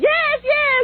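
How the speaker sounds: very high-pitched mock screaming, like a cheering crowd. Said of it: "Everybody's screaming".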